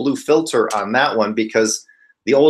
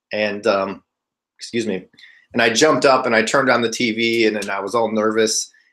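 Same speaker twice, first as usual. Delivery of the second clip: plain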